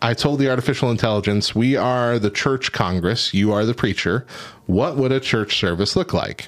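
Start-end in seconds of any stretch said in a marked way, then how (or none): none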